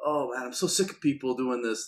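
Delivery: ordinary delivery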